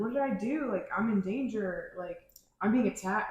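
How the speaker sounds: ordinary delivery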